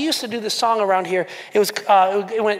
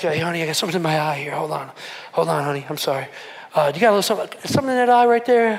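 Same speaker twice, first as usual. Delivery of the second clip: teary, choked up, fighting back tears; 5 semitones lower than usual. Acting out someone in the room who begins to tear up: acting out tearing up. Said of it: "begins to tear up".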